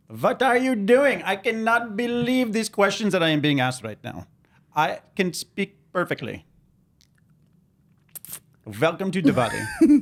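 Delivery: bad, over-the-top, swooping, exaggerated Indian accent. Teased by the others about his accent, speaking in it: horrific Indian accent. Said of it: "Greg's horrific Indian accent".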